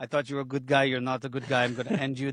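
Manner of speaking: bad Spanish accent, dropped low and deep. Retelling what Ilya Topuria said in a video, bad Spanish-accent Ilya Topuria impression. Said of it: "That's my bad Spanish, sounds Russian impression".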